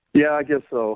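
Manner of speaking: beaten-down, dejected, defeated and resigned. Answering whether ready to get her on the phone, sounding defeated. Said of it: "you sound so defeated".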